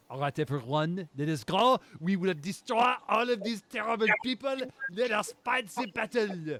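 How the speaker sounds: very high, very loud put-on Austrian accent. Voicing a character who finds courage to use his real accent: character's real accent, heard as austrian. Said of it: "use his real accent".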